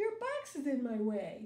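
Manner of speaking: ordinary delivery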